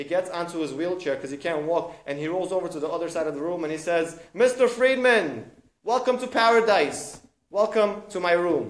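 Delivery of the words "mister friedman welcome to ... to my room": cheerful, upbeat, jolly, loud, very slow and drawn-out. Retelling a story where a wheelchair user welcomes a newcomer, imitating jolly Mr. Lefkowitz. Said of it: "He's so happy. He's so upbeat".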